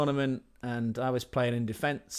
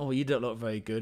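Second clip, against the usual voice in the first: put-on Croatian-accented, broken English. Retelling what the taxi driver said: imitating Alan in broken Croatian. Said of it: "in some sort of broken Croatian".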